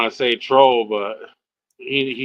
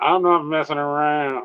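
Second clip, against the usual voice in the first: put-on old-time mobster gangster voice; 3 semitones higher than usual. Saying a line in a less serious way: Bugsy Siegel gangster voice. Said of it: "Like an old gangster with a Tommy gun".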